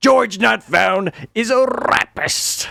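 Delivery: very slow, drawn-out, high, rough, rasping put-on voice. Announcing an attempt at the Keemstar voice, then doing a Keemstar voice. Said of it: "I'm gonna do the Keemstar voice".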